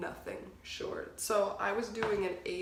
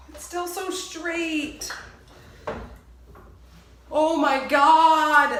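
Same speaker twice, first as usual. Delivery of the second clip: very loud, very slow, drawn-out freak-out; 8 semitones higher, 14 dB louder than usual. Reacting to the hair just cut off, freaking out. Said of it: "Sorry, I'm freaking out right now".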